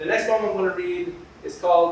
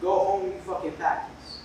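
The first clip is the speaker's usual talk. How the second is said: normal talking voice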